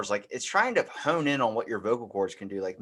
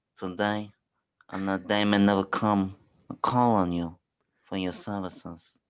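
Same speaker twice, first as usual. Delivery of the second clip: slow, deliberate drawl with jaw pushed forward; 2 semitones lower than usual. Showing another speaker an impression, jaw shifted forward: Don Corleone impression. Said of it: "my Don Corleone's pretty good".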